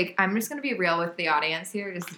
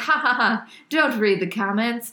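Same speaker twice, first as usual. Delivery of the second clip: raised voice, laughing, dismissive brush-off; 3 semitones higher, 5 dB louder than usual. Retelling how coworkers reacted to reading comments: imitating someone laughing it off. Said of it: "laughed it off and been like".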